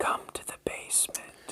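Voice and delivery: soft whisper of a disembodied evil. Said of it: "You hear the disembodied evil".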